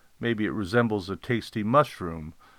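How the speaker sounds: plain reading voice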